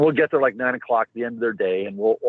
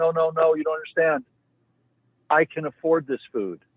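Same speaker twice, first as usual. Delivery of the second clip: tearful crying words, near sobbing, high-pitched; 6 semitones higher than usual. Retelling what a grocery store customer told the staff, imitating someone crying. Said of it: "burst in, into tears and just started crying".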